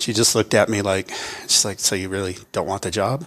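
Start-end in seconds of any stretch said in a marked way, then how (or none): 1.8-3.3 put-on playful teasing tone. Retelling what the speaker's wife said on her way to work, retelling wife's teasing. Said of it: "she was teasing me".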